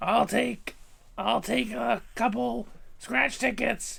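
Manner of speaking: drawn out, high pitched and rough. Acting out a voice actor buying scratch tickets in Marge Simpson voice. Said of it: "you know who you sound like?".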